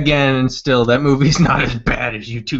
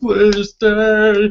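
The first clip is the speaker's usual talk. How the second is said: acted, high, pitiful blubbering, "stay" stretched; 8 semitones higher than usual. Retelling how he begged at their house, imitating pathetic crying. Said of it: "starts crying and shit, like, being all pathetic".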